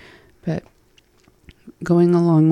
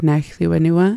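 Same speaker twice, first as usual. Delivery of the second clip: normal talking voice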